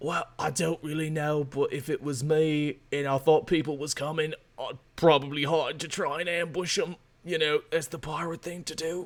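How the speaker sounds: quiet, hushed half-whisper under the breath. After rolling a fifteen, a character answers the players in a half-whisper. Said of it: "he whispers".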